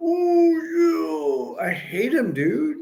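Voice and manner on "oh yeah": pitched-up, swooping showman wrestler drawl, oh stretched wide. Describing the wrestler's hand move while doing his voice: Macho Man Randy Savage voice. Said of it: "I could do his voice".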